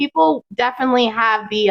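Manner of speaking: usual speaking voice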